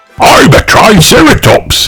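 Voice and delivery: proud, prideful tone. Reading a children's story aloud, Grandad Dog answers a question proudly. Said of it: "said Grandad Dog proudly".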